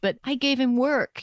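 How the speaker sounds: small, tiny, high little voice. Retelling what an old man said by the fire after dinner, in a tiny voice. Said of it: "she said in this tiny voice".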